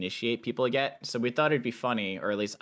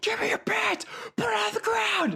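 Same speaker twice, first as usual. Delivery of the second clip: mock shrill, very high screaming. Retelling own shouting at another player in a game, re-enacting the screaming. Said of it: "I'm just screaming in game".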